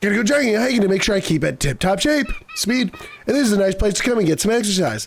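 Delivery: high-pitched geeky, nerdy character voice. Voicing a jogger met in the middle of nowhere, in a nerdy voice. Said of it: "this guy's gotta have like a nerdy voice".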